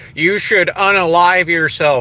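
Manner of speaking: normal talking voice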